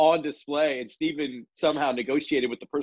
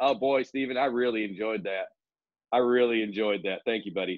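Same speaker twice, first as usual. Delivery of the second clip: put-on deadpan, flat delivery, lower pitch; 4 semitones lower than usual. Retelling how Officer Mike answered Stephen about the Poppy: imitating Officer Mike's deadpan. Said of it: "Officer Mike deadpan just goes".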